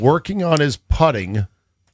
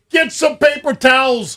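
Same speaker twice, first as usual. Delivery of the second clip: mock very high, shrill, frantic scream; 12 semitones higher than usual. Retelling making a mess in the studio: imitating own screaming. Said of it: "screaming at Ryan".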